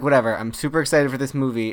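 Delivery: plain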